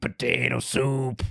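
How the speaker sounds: deep, low put-on voice. Parent recalling an older man behind them repeating a voice, imitating his deep voice. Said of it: "like a deep".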